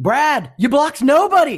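full-lung screech, very high and very loud. Retelling how Mr. Orrick yelled at Brad after the play: imitating Mr. Orrick screaming. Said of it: "starts screaming top of his lungs".

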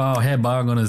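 bad, soft, attempted Southern Virginia accent. Trying out an accent after saying virginia's is soft southern: attempted soft southern accent. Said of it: "Virginia's like a soft Southern accent".

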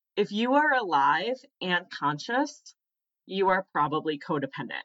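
usual speaking voice

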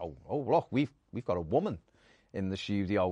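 ordinary delivery

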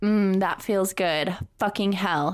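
plain

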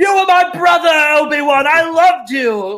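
raw, drawn-out scream, very high and very loud. Acting out an imagined scene of the unmasked villain, Hayden Christensen screaming. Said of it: "just screaming at him".

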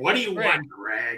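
play-acted grumpy, slow, irritated, annoyed tone. Telling Jeff how he sounds when called: imitating Jeff sounding mad. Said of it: "you sound like you're mad".

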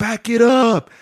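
high, barked, shouted yell. Speaker retells what a guy yelled to the line; retelling a yell. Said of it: "He was yelling to the line".

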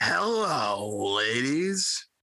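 wrestler promo voice with hello stretched out long. Saying hello in the form of a WWE promo: Val Venis impression. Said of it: "I'm gonna go old Val Venus".

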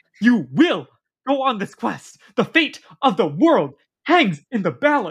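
mock wild, menacing, unhinged yell, pitched high. Recapping a show scene where a god yells at a child, imitating Jason Mantzoukas's unhinged yelling. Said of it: "Yelling in a scary, unhinged way".

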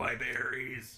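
put-on raspy, comic character voice. Retelling a wrestler getting hit low: Key and Peele burn victim voice. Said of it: "I don't know why I sound like the, the burn victim from Key and Peele".

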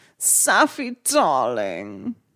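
low, posh woman's voice. After the other speaker declines the impression, the speaker tries a generic posh woman voice. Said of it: "It is just a generic posh woman".

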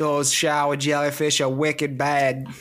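poor put-on Boston accent. Joking that stomped shower jellyfish become boston's problem: bad boston accent. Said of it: "I don't like that accent".

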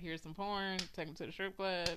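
usual speaking voice

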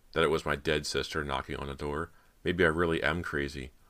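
usual speaking voice

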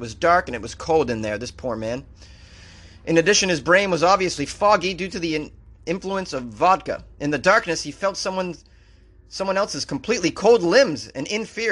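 usual speaking voice

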